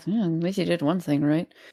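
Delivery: soft mutter under the breath. A character reacts to news about Harcourt, muttered under breath. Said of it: "Under my breath".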